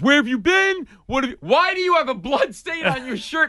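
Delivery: put-on furious yelling, words tumbling out fast. Retelling how a man yelled at the speaker in front of other lawyers, imitating a furious yell. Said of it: "you know when your dad yells at you and, like, he's so mad".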